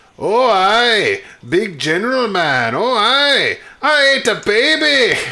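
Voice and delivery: very high-pitched, slow, drawn-out voice. Retelling a movie scene, answering the general: Fat Bastard voice. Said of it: "He's like".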